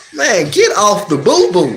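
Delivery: ordinary talk, nothing marked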